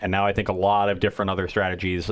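usual speaking voice

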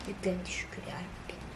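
soft, hushed, relieved whisper.

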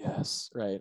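murmured under the breath. Speaker retelling a filmed scene where a man answers after she walks away, in a quiet brooding whisper to himself. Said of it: "quietly whispers to himself".

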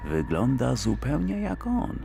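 suspicious, wary whisper. A man looks at a copy of a father and whispers suspiciously. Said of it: "szepnął podejrzliwie Peretti".

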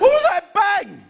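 high-pitched, rattled, nervous complaining tone.

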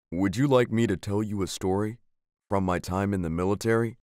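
plain

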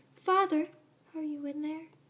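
put-on sweet, cutesy, high little-girl voice. Voicing a little girl calling for her father, trying to sound cute. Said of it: "I'll try to be cute".

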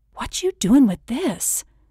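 hushed whisper. A woman presses a bottle into the narrator's lap; the narrator answers, whispering. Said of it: "whispering back".

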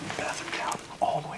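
soft, unvoiced whisper.

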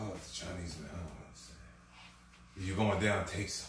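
put-on Russian accent. Quoting a man who did not understand, in a russian accent. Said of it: "think of this in a Russian accent".

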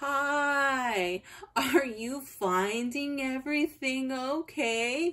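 deliberately slow, careful speech. Quoting a young store worker who leaned over to speak to her, imitating really slow speech. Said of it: "speaks really slow".

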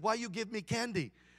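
clumsy, bad put-on Vietnamese accent. Retelling a man's questions to people giving him candy, in a vietnamese accent. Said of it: "I'm going to try to do a Vietnamese accent".

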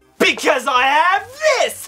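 villainous gloating laughter. Her sister asks why she is evil laughing; she answers with an evil laughing gloat. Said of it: "why are you evil laughing like that?".

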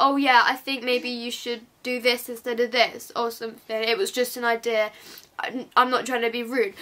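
ordinary talk

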